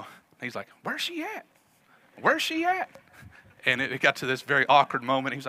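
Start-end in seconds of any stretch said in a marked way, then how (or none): 0.8-2.9 put-on country voice, much higher pitch and slower. Speaker retells a wedding where the bride never came, imitating Benji's high country voice. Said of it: "real high pitched country voice".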